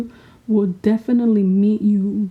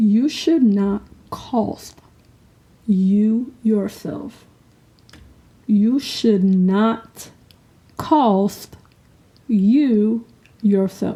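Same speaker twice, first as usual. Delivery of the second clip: speaking slowly at a deliberate pace. Sharing a lesson learned with listeners, speaking slowly. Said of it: "Let me say this slowly".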